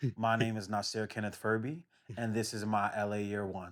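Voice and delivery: ordinary delivery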